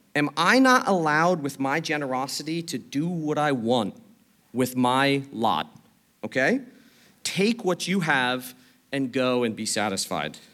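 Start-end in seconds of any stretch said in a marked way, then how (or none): none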